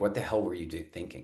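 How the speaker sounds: ordinary talk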